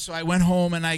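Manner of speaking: usual speaking voice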